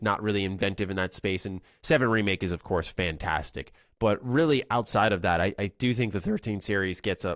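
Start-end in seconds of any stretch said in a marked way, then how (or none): 5.6-7.4 cracking, breaking voice. Speaker giving opinions in a conversation, voice cracking. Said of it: "my voice cracked".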